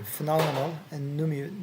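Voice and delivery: plain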